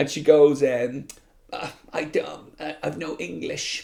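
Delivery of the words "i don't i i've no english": very soft, slow, drawn-out, creaky, faltering mumble. Retelling what the woman driver said to the speaker: imitating the woman driver. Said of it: "like this to me".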